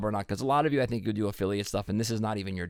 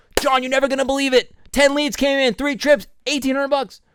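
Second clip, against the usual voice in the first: very high, overexcited, gushing voice; 7 dB louder than usual. Showing the wrong way to report results: overexcited amateurish delivery. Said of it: "That's amateurish".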